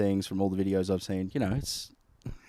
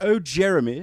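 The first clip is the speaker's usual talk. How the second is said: high, loud mock posh voice. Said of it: "an act out for a rich person".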